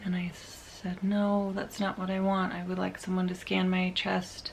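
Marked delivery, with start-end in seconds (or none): none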